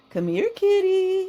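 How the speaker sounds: gentle, sweet, coaxing voice, pitched very high. Explaining voice affect, calling to a cat in a kind, sweet voice. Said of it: "a kind, sweet voice".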